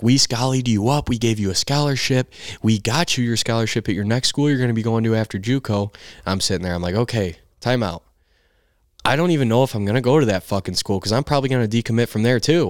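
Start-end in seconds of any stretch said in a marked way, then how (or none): 0.0-5.9 mock screaming at the top of the lungs. Recounting a man screaming at them in his office over transferring, retelling a scream. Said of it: "screaming at me at the top of his lungs".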